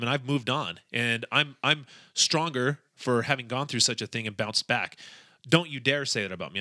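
plain

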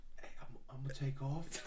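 quiet whisper. Retelling what a guest whispered before leaving: imitating Tug Bug whispering. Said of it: "he whispered in Tristan's ear".

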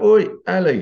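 put-on shouting. Retelling a classmate calling across the class: imitating someone shouting. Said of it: "someone shout".

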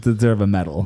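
ordinary talk

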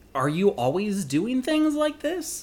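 high-pitched, loud, astonished tone.

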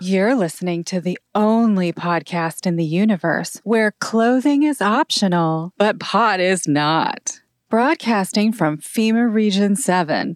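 high, sexy, seductive read. Demonstrating the podcast's regular tuesday night show intro, sexy read. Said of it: "we use the sexy read".

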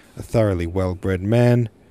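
ordinary delivery

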